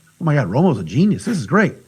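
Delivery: normal talking voice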